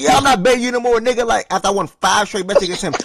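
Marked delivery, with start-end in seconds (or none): 0.0-1.3 put-on, worked-up, pitched-up emotional voice. Retelling a friend refusing more bets after losing: imitating O G getting emotional. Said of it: "After he got emotional about a month ago".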